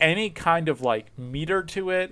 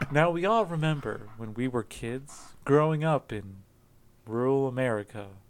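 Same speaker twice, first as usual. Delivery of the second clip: calm public radio narrator voice, quieter; 6 dB quieter than usual. Introducing a topic in the style of public radio: Ira Glass NPR voice. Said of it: "make it sound like N P R".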